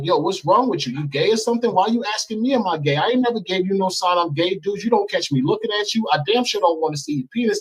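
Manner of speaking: put-on angry ranting. Retelling still going off on a man: imitating an angry rant. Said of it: "So I'm going in on him like".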